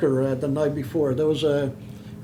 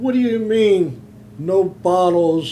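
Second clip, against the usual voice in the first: put-on yelling, higher pitch; 4 semitones higher than usual. A storyteller quotes one guy at the bus, retelling a yell of protest. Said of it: "one guy's yelling".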